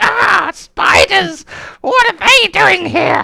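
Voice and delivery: very high, loud, piercing shrill shrieks. Describing to listeners the voices they can hear reacting to spiders, shrill voices. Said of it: "you can hear some shrill voices going".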